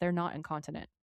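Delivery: flat, dead-serious deadpan with no inflection. Retelling a scene, speaker quotes Cass's reply to Dean, imitating Cass's deadpan. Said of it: "Cass looks at him deadpan and says".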